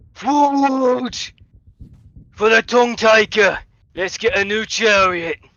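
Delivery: booming, very loud, high call. Narrating a scene, voicing a call from the distance, booming voice. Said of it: "the sound of a booming voice going".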